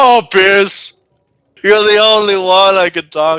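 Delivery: high-pitched, breaking-down, falling-apart outpouring voice. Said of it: "just break down".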